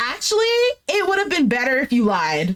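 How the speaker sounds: normal talking voice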